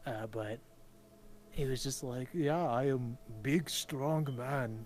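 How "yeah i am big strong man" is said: boastful put-on German accent, loud and slow. Describing a man who was full of himself, in an almost German accent. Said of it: "It was almost like he had a German accent".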